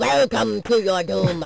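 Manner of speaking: rough, creaky game announcer voice, soft and high. Working on an impression of the guy heard in the game: impression of the game guy. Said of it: "I can work on my impression of it".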